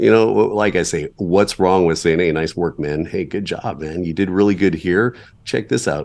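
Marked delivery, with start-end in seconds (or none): none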